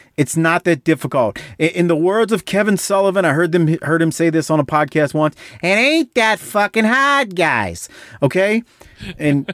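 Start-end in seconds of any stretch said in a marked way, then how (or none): 5.6-7.4 put-on Boston accent, pitched up. Quoting a line once heard on a podcast, Boston accent. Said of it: "how was my Boston accent right there".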